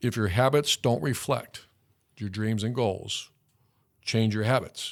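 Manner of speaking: measured, slow, deliberate, word-by-word delivery. Repeating a quote from the team room a second time: said slowly. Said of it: "I'm going to say that again slowly".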